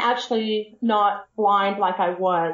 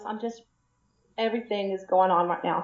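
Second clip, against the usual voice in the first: soft, tearful voice, talking mid-cry; 5 dB quieter than usual. Author asked about her new series, crying. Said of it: "I am crying".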